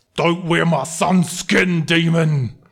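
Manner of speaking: growling, snarling voice in character. Voicing a father growling at a player's back. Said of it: "You hear him growling at your back".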